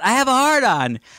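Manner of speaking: high blurted yell. Retelling a podcast moment a passerby overheard: imitating own past yell. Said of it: "I yell out".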